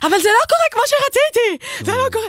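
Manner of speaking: very high, shrill shout, very close up. Speaker recounts yelling into his ear during the wedding, retelling a shout in his ear. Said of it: "אני פשוט צועקת להמית באוזן".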